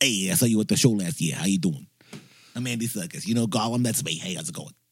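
put-on heavy, laid-on Brooklyn accent, chatty. Imitating Andy Serkis greeting a fan: thick Brooklyn accent. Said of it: "he's got this thick Brooklyn accent".

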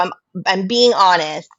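ordinary delivery

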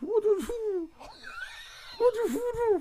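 very high, mock astonished voice. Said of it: "He's probably like".

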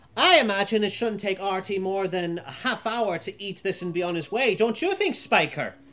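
very loud yelling. The narrator voices a woman addressing spiker right next to her, very loudly. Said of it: "She goes very loudly to Spiker".

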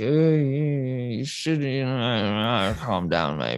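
low drawl with "you" stretched out. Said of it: "And [name] speak".

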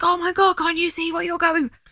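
acted-out shout. Recalling childhood TV watching, retelling shouting at the TV. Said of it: "I think I shouted at the TV".

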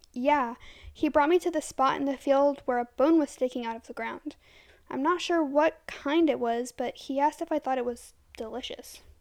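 plain reading voice

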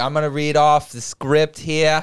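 put-on very broad Massachusetts accent. Retelling how a judge read from the script, in a very thick Massachusetts accent. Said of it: "very, very Massachusetts accent".

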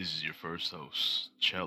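slow, breathy, hushed, soft voice.

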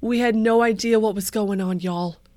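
loud, deliberately put-on Texas accent. Quoting a woman from Texas, in a put-on Texas accent. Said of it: "This is my Texas accent".

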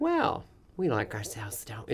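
soft, prim, proper-sounding delivery. Recalling slipping into a character voice, in Church Lady voice. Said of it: "I just kept going into the church lady".

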